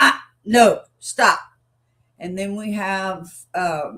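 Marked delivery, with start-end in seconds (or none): 0.0-1.4 loud, sharp, correcting tone. Explaining three tones of voice, demonstrating the correction tone. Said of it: "We have the correction tone".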